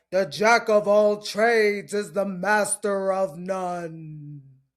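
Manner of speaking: mock doom-laden, very slow, no words drawn out. Quoting the warnings people give, in a mock-ominous voice. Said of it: "in their most ominous voice".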